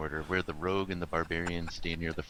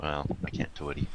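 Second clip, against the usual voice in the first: theatrical stage whisper; 2 semitones lower than usual. After announcing they will half-whisper, the speaker carries on, half-whispering. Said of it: "I'm gonna whisper".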